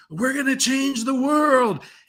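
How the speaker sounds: mock fervent rousing yell. Retelling a scene from a Theranos feature: imitating someone yelling. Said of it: "she's, like, yelling".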